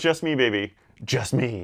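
campy, hammy, slow delivery. Quoting how the character literally delivers the line: campy Ash Williams voice. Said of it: "he literally goes".

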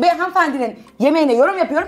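high angry yelling.

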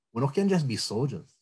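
put-on heavy Hawaiian pidgin accent, laid on thick. Retelling what a man said in a story: thick Hawaiian pidgin accent. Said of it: "he said it in a very thick pidgin accent".

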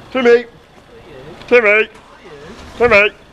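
odd, very high-pitched put-on voice. Calling out to Timmy: weird voice. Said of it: "Why am I saying it in a weird voice?".

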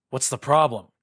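loud, growling delivery. A companion questions the narrator's worry about a lost item, growling. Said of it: "growled Ikarax".

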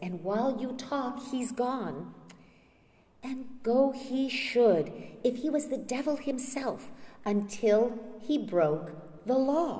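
fed-up, exasperated tone. Reading a play aloud, the wife answering: exasperated tone. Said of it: "in an exasperated tone".

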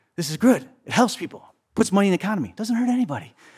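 put-on high whisper. Speaker recounts Biden leaning forward and talking to him: retelling Biden's whisper. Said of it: "he's whispering and he leans forward".

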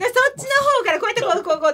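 fast, rapid-fire, excited rattling talk.

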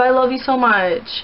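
ordinary talk

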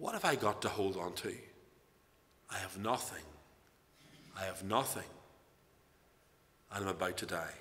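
very quiet, low, faint, failing dying voice. Retelling a dying man's reply to those shouting at him: imitating a very weak voice. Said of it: "in a very weak voice".

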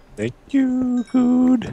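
very high-pitched voice. Thanking someone for leaving redstone, in a high-pitched voice. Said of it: "That was really high-pitched".

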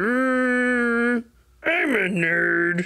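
mocking put-on impression voice. Retelling how a cousin used to do an impression of him: imitating a cousin's impression. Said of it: "He'd go like this".

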